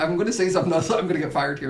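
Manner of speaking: ordinary talk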